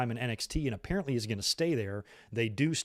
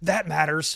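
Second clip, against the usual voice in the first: loud, sudden scream without a pause; 4 semitones higher, 6 dB louder than usual. Retelling a commentator's instant reply to a wrestler: imitating Pat McAfee screaming. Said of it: "just screams".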